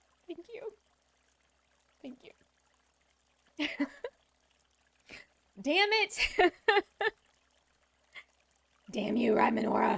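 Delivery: choked-up, weeping through the words. Speaking on the internet to Rhymenora and others, crying. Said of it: "here I am crying on the internet".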